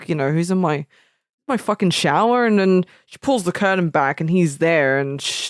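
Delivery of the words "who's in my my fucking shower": ordinary talk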